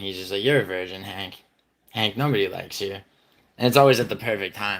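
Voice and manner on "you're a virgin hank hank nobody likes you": dry, flat, deadpan delivery. Describing his impression of Madison, doing Madison's flat voice. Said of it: "his voice is, is like kind of just flat".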